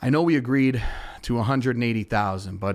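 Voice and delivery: normal talking voice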